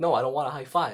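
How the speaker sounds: ordinary delivery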